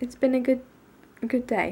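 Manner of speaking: talking with hiccups. The speaker sums up their day while hiccuping. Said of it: "Sorry, hiccups".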